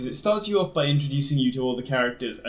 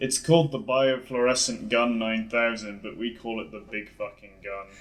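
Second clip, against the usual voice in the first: mock low, flat, bored monotone, no energy; 4 semitones lower than usual. Speaker offers to do an impression, imitating someone bored and flat. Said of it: "Can I do an impression?".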